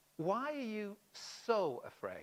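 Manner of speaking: heavy emphasis on the word "so". Quoting Jesus' words to his disciples, with stress on so. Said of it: "I've put the emphasis on the so".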